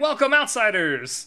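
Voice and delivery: overly loud shriek. Describing a character greeting the group as they approach, shrieked overly loud yell. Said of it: "he shrieks out this um overly uh, you know not an inside voice kind of a yell".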